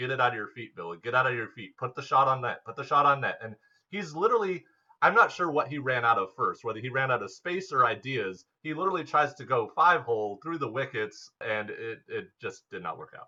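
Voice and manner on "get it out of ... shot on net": ordinary delivery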